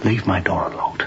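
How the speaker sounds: ordinary delivery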